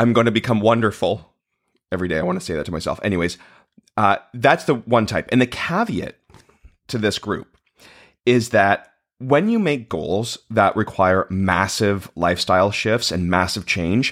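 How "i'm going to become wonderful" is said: full of sheer, earnest hope. Quoting a Thirty Rock line: imitating sheer hope. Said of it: "sheer hope".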